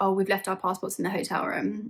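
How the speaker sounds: normal talking voice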